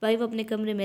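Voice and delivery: ordinary talk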